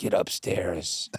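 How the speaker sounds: put-on very quiet, hushed voice. Retelling the dad's reaction after the speaker scared everyone, retelling a very quiet command. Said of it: "like qu- very quietly goes".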